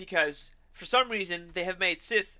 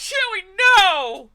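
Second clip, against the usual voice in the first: very high, very loud, shrill yelling outburst; 13 semitones higher, 11 dB louder than usual. Retelling a reaction in the theater: imitating own yell. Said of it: "And I yelled".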